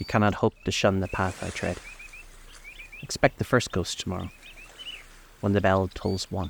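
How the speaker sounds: ordinary delivery, nothing marked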